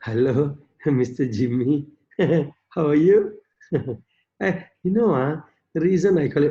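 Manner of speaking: low, lifeless voice like a dead body. Mocking how some people phone with an invitation, imitating dead-body talk. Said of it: "they talk like a dead body".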